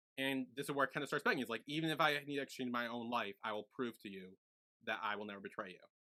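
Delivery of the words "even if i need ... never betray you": plain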